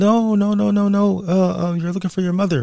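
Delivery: high-pitched, loud yelling call. Retelling how a nurse down the hall called out: imitating a nurse yelling. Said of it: "she starts yelling".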